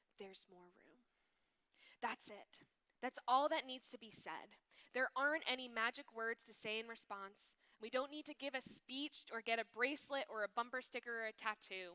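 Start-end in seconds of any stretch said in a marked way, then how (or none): 0.2-1.1 very soft whisper, close to the ear. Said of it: "and whisper in our ears".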